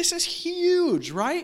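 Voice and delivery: amazed, high-pitched, slow, drawn-out delivery.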